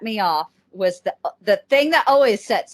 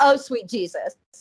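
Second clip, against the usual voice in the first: plain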